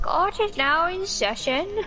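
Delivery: put-on old person voice. Opening a pretend court session, the speaker does their best old person voice. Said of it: "I need to do my best old person voice".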